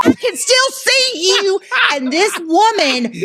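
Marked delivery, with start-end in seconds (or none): 0.0-1.6 mock angry, very high-pitched snapping tone. Retelling how their mother snapped at a woman: imitating an angry snap. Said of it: "she snaps".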